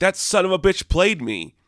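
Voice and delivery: high, panicked, freaked-out, betrayed-sounding outburst. Retelling a comic scene as Mark leaves the building: imitating Mark freaking out. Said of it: "Mark is freaking out".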